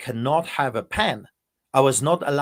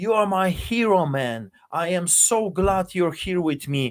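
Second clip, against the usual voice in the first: mild, toned-down yell, excited; 4 semitones higher than usual. Pastor retelling a man jumping out of his chair, retelling a yell. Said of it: "he yells at the top of his voice".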